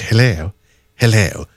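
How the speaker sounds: posh telephone voice, put on. Retelling how a work colleague answers when the speaker phones her, posh telephone voice. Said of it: "she's got one of those posh telephone voices".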